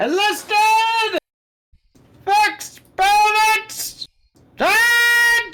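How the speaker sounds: shouting. Leading a charge in the game, yelling out orders. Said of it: "besides yelling out orders".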